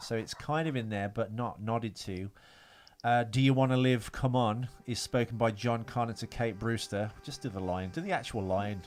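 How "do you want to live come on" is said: plain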